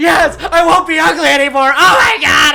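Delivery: very high, very loud, drawn-out shrill scream. Retelling own reply to a preacher on the phone: retelling own scream. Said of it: "screaming this".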